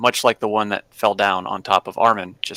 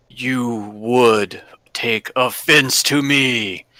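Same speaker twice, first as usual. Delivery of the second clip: slow, deliberate voice of a speaking stone statue; 2 semitones higher than usual. Voicing a statue that speaks to the players: booming voice. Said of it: "you hear booming in the same voice".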